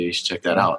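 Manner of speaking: normal talking voice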